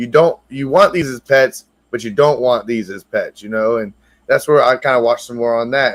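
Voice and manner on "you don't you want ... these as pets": put-on, dry, sarcastic, knowing tone. Retelling a sarcastic line from a YouTube video: imitating Gator Boy being sarcastic. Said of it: "he was kinda being sarcastic".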